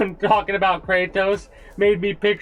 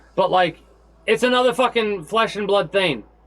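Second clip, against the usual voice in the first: heated, riled-up, worked-up rant. The speaker apologizes for sounding heated, then keeps going: heated. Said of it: "Sorry if I sound a bit more heated".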